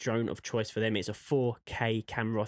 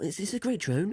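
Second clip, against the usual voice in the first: put-on, pitched-up, salesy commercial advertiser voice; 9 semitones higher than usual. Presenting a Mavic Pro drone in a put-on advertiser voice. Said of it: "I'm going to do my advertiser voice".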